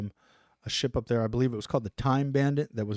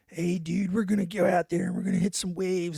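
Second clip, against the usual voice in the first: fast, pitched-up California surfer dude voice; 6 semitones higher than usual. Describing a man from surfer California stock he clashed with, California surf-bum voice. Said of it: "he kind of like talked like a uh, like a surf bomb".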